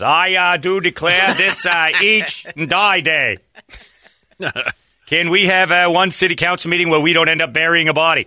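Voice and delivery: very high, animated-cartoon mayor voice. Answering a request to do Mayor Jerry as Mayor Quimby, Mayor Quimby voice. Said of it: "do Mayor Jerry as Mayor Quimby".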